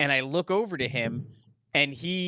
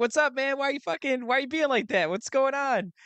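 put-on teasing tone, playful and very high; 11 semitones higher than usual. Retelling how the girlfriend ribbed him at the table: imitating teasing. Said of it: "fucking ribbing him".

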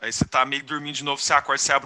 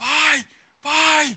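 piercing, very high, loud scream; 13 semitones higher, 10 dB louder than usual. Narrator acting out the listener waking with fever in a carriage, screaming. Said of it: "E você acorda gritando".

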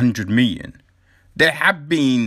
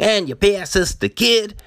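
put-on San Francisco way of talking, pitched high; 6 semitones higher than usual. Acting out again how they would ask for the kid, imitating San Francisco talk. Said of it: "that's how they talk in San Francisco".

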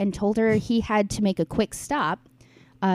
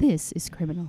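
put-on calm radio host voice; 3 semitones lower than usual. Asked for their best NPR voice, the speaker does a Phoebe Judge impression. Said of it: "I'll do like a Phoebe Judge".

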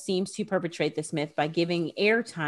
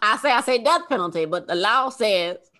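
Southern cartoon voice, higher pitch; 4 semitones higher, 6 dB louder than usual. Retelling a person they'd listen to all day, in a Foghorn Leghorn voice. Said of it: "It was like foghorn, leghorn. I say".

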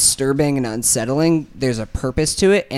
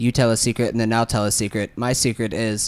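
acted, utterly flat, deadpan monotone; 3 semitones lower than usual. Describing a movie scene where Colin Farrell sits with his son, imitating Colin Farrell's monotone. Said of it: "in the most monotone voice ever and was like".

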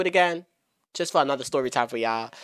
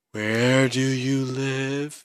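very slow, dragged, drawn-out delivery. Retelling a phone call with a tipsy agent: imitating very slow speech. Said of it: "She's talking slow as fuck".

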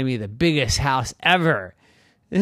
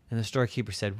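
plain reading voice

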